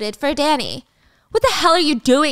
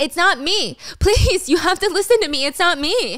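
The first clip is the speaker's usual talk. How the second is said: mock male scream, much higher pitch; 3 dB quieter than usual. Recounting an accused man begging everyone to believe him, imitating a man screaming. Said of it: "And he's screaming".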